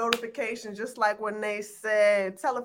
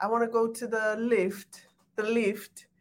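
put-on British accent. Asked to give her british accent, a speaker talks in a british accent. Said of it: "Give me your British accent".

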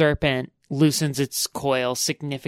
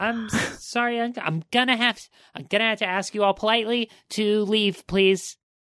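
little goblin voice, much higher; 8 semitones higher than usual. Voicing the little goblin man behind the desk in a game, little goblin man voice. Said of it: "the little goblin man behind the desk go".

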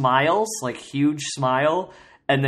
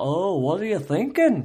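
Scouse Liverpool accent; 4 semitones higher than usual. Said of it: "talks like one of the Beatles".

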